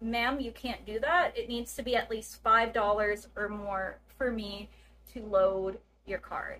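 normal talking voice

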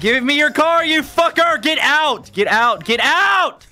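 convincing, menacing voice, very high and slow. Ordering someone out of their car: realistic carjacker threat. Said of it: "That sounded a little too realistic".

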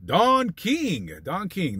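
drawn-out boxing announcer style voice.

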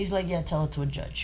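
ordinary delivery

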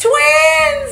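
very high-pitched, very loud yell. Retelling calling out to another foreign patient from the same hospital: retelling a shout. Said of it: "Eu gritei pra ele".

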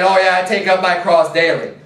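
plain

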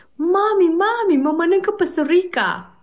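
frightened, very high, loud little voice. Telling a joke, the speaker voices Alinuța running to her mother, acting scared. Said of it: "Alinuța speriată s-a dus la mama ei și i-a spus".

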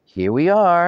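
very high, cheerful voice. Dad pulls up with the family alongside a building in the rain, cheerful. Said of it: "announced Dad cheerfully".

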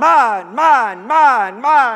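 very loud, very slow, drawn-out seagull hollering. Retelling a movie scene where seagulls spot fish: seagulls hollering mine. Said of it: "they start a hollering".

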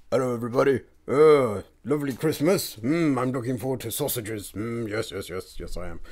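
put-on male-sounding man's voice. Giving a christmas greeting to everybody on a podcast, in a man's voice. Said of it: "I don't know why you've got a man voice".

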